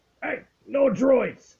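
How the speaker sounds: rough, gruff, very high alien voice. Narrating players walking into the cantina as someone shouts, in a gruff alien voice. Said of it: "you hear a very gruff alien voice say".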